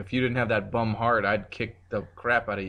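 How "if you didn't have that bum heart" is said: usual speaking voice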